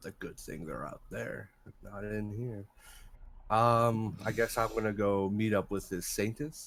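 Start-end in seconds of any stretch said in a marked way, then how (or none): 0.0-2.6 very hushed, quiet, light mutter. Narrator voicing a character who heads off to meet the saintess, lightly muttering to himself. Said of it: "He'll just lightly mutter to himself".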